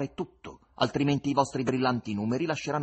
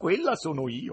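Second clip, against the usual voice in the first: snickering, laughing through the words; 4 semitones higher than usual. A young woman answers a menacing question, sniggering. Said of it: "rispose schignazzando".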